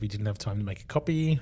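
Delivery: ordinary talk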